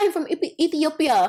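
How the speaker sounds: high, fake Ethiopian accent. Retelling how Joy claimed to be from Ethiopia: imitating Joy's put-on accent. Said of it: "she had this accent".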